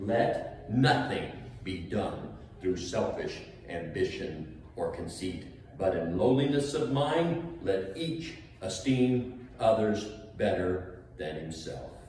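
very slow, measured, deliberate, unhurried reading. Reading a bible verse aloud to listeners, reading it slowly. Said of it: "I read it slow".

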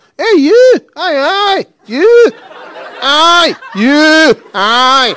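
put-on very slow drunken heckling, "aye" drawn out. Retelling a heckle from a hammered man at a glasgow gig: imitating a drunk heckler. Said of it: "He was hammered, proper hammered".

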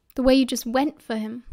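ordinary delivery

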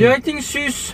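high, loud, suspicious, accusing voice.

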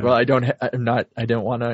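fearful, stuttering speech. Retelling a scene where a character faces down another: imitating Ringo stuttering in fear. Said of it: "he's kinda stuttering".

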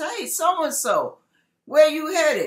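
play-acted, high, hollered call. Acting out a passerby calling to someone on the road: hollering out to someone. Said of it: "somebody hollers out at you and says".

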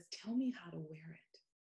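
mock whispering. Retelling a young man's quiet request about a fragrance: imitating someone whispering. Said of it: "he whispered to me".

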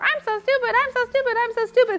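very high, squeaky cartoon mouse voice. Coaching listeners through an exercise, repeating a limiting belief in a Mickey Mouse voice. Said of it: "you say in a Mickey Mouse voice".

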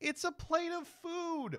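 mock incredulous, high, slow mocking voice.

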